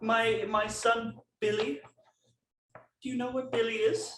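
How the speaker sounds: put-on very high elderly lady llama voice. Playing a llama character in a scene with others, older lady llama voice. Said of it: "this is a older feminine llama".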